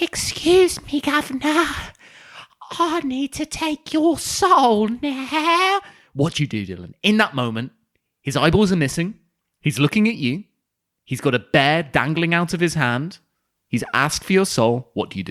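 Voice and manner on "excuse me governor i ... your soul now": put-on very high, slow Victorian ghost boy voice. Narrating a ghost scene for another player: voicing a young Victorian ghost boy. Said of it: "He goes".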